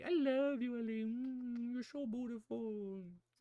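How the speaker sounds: squeaky high-pitched voice. Showing how the voice changes when talking to the baby: squeaky voice. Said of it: "I like how my voice gets so squeak-".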